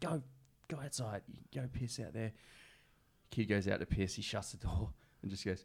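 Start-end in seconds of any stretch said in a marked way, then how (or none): 0.0-2.3 mock-cranky teacher voice, higher, quieter. Retelling what a teacher said after getting up for a kid at night; mimicking a cranky teacher. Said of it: "he's all cranky".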